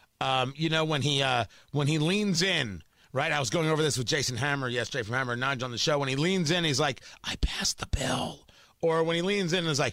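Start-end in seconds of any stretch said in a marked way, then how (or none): 7.2-8.4 slow, breathy, drawn-out close whisper. Imitating Joe Biden leaning in during a speech: Joe Biden whisper. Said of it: "And he does that whisper".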